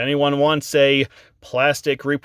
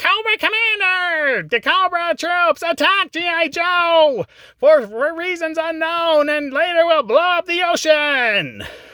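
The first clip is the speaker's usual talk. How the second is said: very high, screechy villain voice, name stretched out. Imitating how Frank Welker voices Cobra Commander, in a screechy Megatron voice. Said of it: "he does that Frank Welker Megatron screechy voice".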